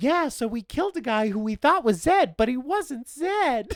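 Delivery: calm, crystal-clear, very high close-to-the-mic voice. Retelling a lady's line from a scene, in a crystal-clear into-a-microphone tone. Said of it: "in the most like crystal clear like right into a microphone tone of voice".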